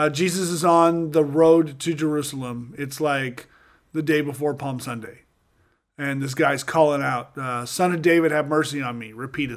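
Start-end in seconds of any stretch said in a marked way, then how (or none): none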